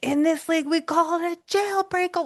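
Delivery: shouting pitched very high. Speaker retells correcting the TV commentators during a game, retelling yelling at TV. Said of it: "Like I'm like yelling at the T V".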